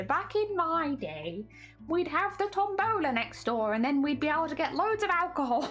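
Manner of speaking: put-on high, elderly old lady voice. Speaker welcoming Cooper while talking about tombolas, in an old lady voice. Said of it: "Old lady voice here".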